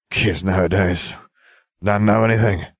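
put-on slurring the words. First-person narrator talks to a group of six, with slurred speech. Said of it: "I slurred".

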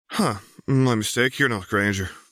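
sheepish mumbling, thick with embarrassment. A girl realizing she mistook a stranger for someone else, embarrassed mumble. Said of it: "the embarrassment thick in her voice".

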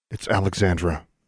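usual speaking voice

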